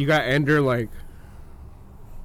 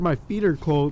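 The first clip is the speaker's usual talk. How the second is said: ordinary delivery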